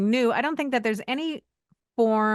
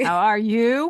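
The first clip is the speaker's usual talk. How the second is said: fake, machine-like robotic AI voice; 4 dB louder than usual. Joking about wearing a name tag, greeting listeners: put-on robotic AI voice. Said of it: "trying to sound as, uh, as, uh, A I as possible".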